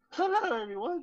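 put-on very high, squeaky voice cracking like a teen's. Greeting everyone at the show's start, voice like a teenager in puberty. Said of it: "you sound like a teenager going through puberty".

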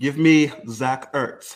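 loud, horrible, bad put-on English accent. Making his pick when it's his turn in the round, in a bad fake english accent. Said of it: "A little bit on the accent".

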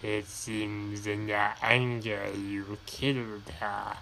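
muted, low, hushed dark villain voice. Acting out the end of Revenge of the Sith, doing a Darth Sidious impersonation. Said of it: "my best impersonation of Darth Sidious".

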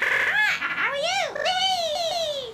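slow, crying, obnoxious robot AI voice. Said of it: "an obnoxious voice".

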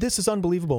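loud yelling, shouting. Retelling watching an exciting game at home: imitating own yelling. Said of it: "I kept yelling".

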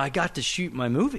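usual speaking voice

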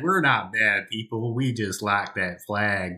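put-on Texan character accent. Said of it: "as a character".

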